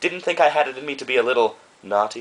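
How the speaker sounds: ordinary talk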